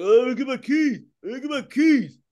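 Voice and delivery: mock slurred mumble. Retelling his car fire after biting his tongue, speaker is imitating garbled speech. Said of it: "because you know I couldn't talk".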